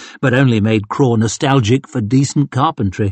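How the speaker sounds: plain reading voice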